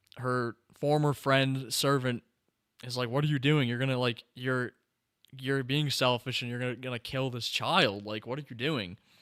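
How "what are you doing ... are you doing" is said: ordinary talk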